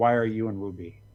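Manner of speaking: put-on clattering, rattling monster voice. Voicing a creature that took human shape, in a clattering creature voice. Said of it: "I think it kind of clatters".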